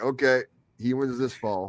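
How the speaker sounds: plain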